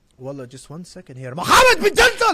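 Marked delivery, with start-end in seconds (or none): 1.4-2.4 very loud, very high, shrill shout. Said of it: "if you keep yelling at me".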